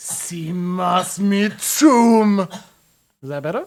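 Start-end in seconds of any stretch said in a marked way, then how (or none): 0.0-2.4 angrier, loud, very slow and drawn-out delivery. Performing a combat line again when asked: with more anger. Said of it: "Say it with more anger".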